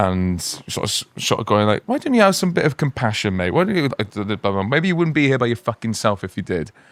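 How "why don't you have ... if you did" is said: acted, heated, indignant, angry telling-off tone. Retelling calling out a rude man in a and e: retelling own angry words. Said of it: "And I just got so angry".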